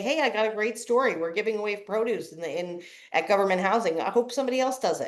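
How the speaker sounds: ordinary talk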